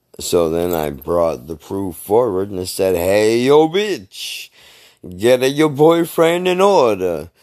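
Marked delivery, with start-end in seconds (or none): 3.0-7.2 high, loud, slow put-on Italian accent. Confronting a woman about her boyfriend with photo proof, Yogi Bear voice turned Italian. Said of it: "I don't know why Yogi Bear turned Italian".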